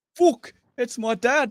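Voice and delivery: high, slow, loud, drawn-out bad English accent. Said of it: "That was a terrible accent".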